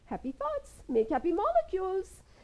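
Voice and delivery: put-on high, sing-song, swooping, heavy Indian accent. Quoting a saying you can't say without the accent, in a Deepak Chopra accent. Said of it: "I can't say it without this accent".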